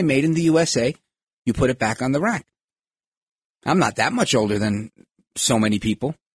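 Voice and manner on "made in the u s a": normal talking voice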